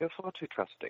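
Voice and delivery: very nonchalant, carefree, slightly high. Retelling a film villain's line after destroying a planet: nonchalant Peter Cushing impression. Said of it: "he just very nonchalantly says".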